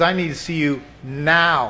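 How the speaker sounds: ordinary talk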